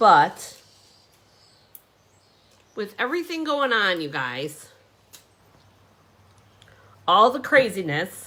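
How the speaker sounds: voice choking with emotion. Starting to explain the story behind a card, getting choked up. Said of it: "I'm getting choked up".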